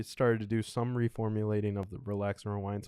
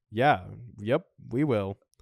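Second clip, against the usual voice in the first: bone-dry, deadpan delivery, raised; 6 dB louder than usual. Speaker retells how the listener answered while staring, imitating a deadpan reply. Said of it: "just deadpan staring and going".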